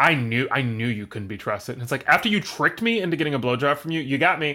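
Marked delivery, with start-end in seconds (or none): 0.0-1.7 put-on smug tone, lower. Retelling what she said when she confronted him, mock-smug. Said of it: "she says to him so smugly".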